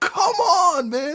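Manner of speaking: mock exasperated, frustrated, high, loud yell. Describing a turnover in a game, the speaker imitates a player yelling at a teammate. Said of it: "he's like yelling at him".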